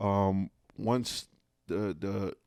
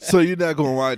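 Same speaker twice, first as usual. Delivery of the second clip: laughing, louder and higher. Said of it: "I'm still laughing 'cause that was funny".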